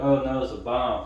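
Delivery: plain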